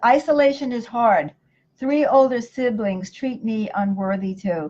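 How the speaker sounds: ordinary delivery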